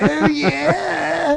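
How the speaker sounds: very high, whiny little voice, drawn-out yeah. Describing how a vagina would talk: whiny voice like Stella. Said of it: "kinda whiny, like".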